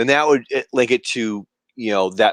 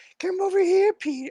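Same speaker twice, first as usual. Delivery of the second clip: put-on old man voice, higher pitched; 3 dB quieter than usual. Answering a question on how an old man character talks: Herbert voice. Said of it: "that old man".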